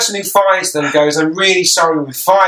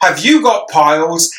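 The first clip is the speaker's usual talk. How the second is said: stiff, slow infomercial-style advert delivery. Comparing film dialogue to an advert: imitating an infomercial. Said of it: "it literally feels like an infomercial".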